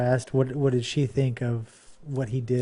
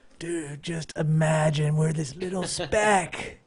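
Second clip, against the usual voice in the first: spoken in a stoner voice; 3 semitones higher than usual. Imagining how Carl Sagan would talk, doing Carl Sagan as a stoner. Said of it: "if he talked like a stoner".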